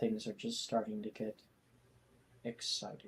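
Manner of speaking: soft, completely flat delivery. In a tabletop game, a player's character comments in the most non-excited voice possible. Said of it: "in the most non-excited voice possible".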